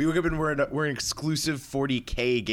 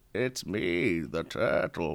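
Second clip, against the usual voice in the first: put-on very deep old-man voice; 8 semitones lower, 3 dB quieter than usual. Trying out a voice for a turtle character, as very deep old Bane. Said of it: "You're going too deep".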